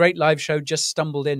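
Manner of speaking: ordinary delivery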